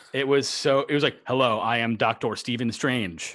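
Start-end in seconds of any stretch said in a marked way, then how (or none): 1.2-3.3 put-on American accent. Mocking an actor's forced american accent in a film. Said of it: "Benedict Cumberbatch had to do an American accent".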